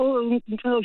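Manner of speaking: ordinary delivery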